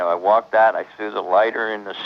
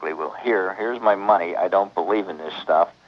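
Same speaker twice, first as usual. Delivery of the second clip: plain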